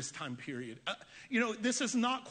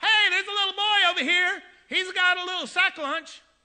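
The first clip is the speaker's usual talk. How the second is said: high, very loud yelling, calling out; 9 semitones higher, 11 dB louder than usual. Acting out a disciple pointing out a boy with lunch: yelling out. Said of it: "And Andrew yells out".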